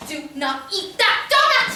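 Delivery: slow, forceful, aggressive voice, pitch rising. Warning someone not to eat a donut: aggressive warning. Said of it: "you don't have to be so aggressive".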